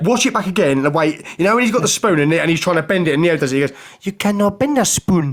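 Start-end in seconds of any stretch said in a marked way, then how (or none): 4.0-5.3 Glaswegian voice in put-on American accent, slow and high. Retelling a film scene's spoon line, mocking a Glaswegian doing an American accent. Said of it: "he's like he's Glaswegian, but they've got him to put an American accent on".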